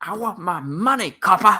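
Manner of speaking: put-on screaming comic-book villain, shrill and loud. Talking about a villain returning to The Flash, the speaker imitates the villain's scream. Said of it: "he was the guy that screams".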